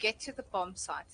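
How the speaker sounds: ordinary delivery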